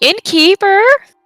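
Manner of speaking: loud, projecting, ladylike call. Calling for the innkeeper in character, projecting voice like a lady. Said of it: "I am going to project my voice as a lady would".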